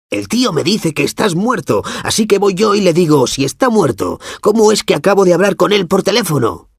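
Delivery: very high, shrill, loud, hostile voice. Reading a story aloud, voicing Chucky Kasmersky's high, hostile voice. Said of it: "[name] parecía perplejo. / La voz de Chucky Kasmersky sonaba aguda y hostil".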